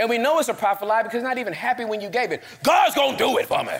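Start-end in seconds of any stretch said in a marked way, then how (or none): 2.6-3.7 mock annoyed, huffy, mad, rough-edged insistence. Imitating a frustrated person insisting god will act: imitating someone sounding mad. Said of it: "you sound mad".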